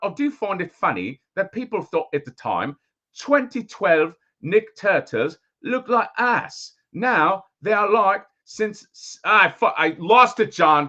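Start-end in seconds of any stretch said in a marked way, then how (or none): 0.0-9.2 mock accent drifting into Australian, higher pitched. Reading a viewer's super chat aloud, put-on accent drifting into Australian. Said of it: "in the middle of that accent".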